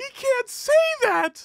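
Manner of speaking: very high, tearful, sobbing crying voice. Retelling a woman in the hallway talking to a person: imitating someone crying.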